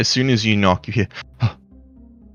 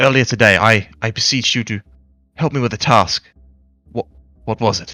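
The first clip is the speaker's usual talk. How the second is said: panicked, panicky voice. Narrating a game, the speaker voices Kari answering visitors who knocked, panicked. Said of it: "you can tell that he's sort of panicked".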